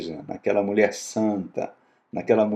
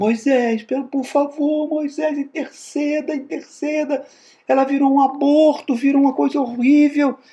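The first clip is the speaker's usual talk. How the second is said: put-on very high, frantic, desperate pleading shout; 4 dB louder than usual. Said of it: "Começa a gritar".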